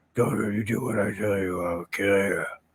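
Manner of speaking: hushed superhero voice. Imitating an actor's take on the hero, in a quiet Batman voice. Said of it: "trying to do a quiet Batman".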